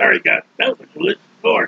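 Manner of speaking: creaky, roughened, apologetic little worm voice. Imagining the worm speaking to god after eating the gourd: voicing the worm. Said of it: "that worm there".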